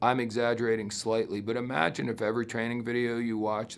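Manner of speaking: low, flat, droning one-note monotone. Speaker demonstrating how a training video would sound: flat monotone. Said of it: "I talked in this sort of a monotone".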